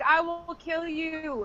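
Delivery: put-on, very slow, drawn-out, mildly threatening scolding yell. Retelling how Crystal yells at her kids: imitating Crystal yelling. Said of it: "where she's yelling, like".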